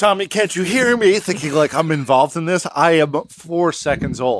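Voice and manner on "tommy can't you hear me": pitched-up, mild, light calling out. Imitating a father yelling into a newborn's ear: imitating a dad yelling. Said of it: "There's your dad just yelling in your ear".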